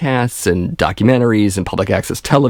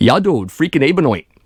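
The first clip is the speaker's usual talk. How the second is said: pitched-up, put-on Vermont local accent; 6 semitones higher than usual. Showing the accent used with a Halloween costume, Vermont accent. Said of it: "I even did the Vermont accent".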